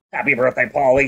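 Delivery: eerie, creepy, mechanical robotic male voice. Retelling the robot greeting paulie at his birthday party: imitating creepy robotic male voice. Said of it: "it's a creepy robotic male voice".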